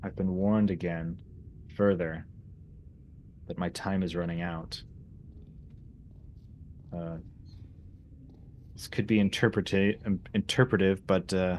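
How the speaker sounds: ordinary delivery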